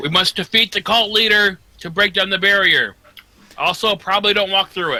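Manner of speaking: very high, loud shout. A player's character yells out to fellow heroes at arms: yelling to allies. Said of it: "I yell out to my to my heroes".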